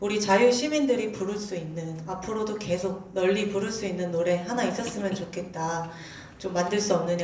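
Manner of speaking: plain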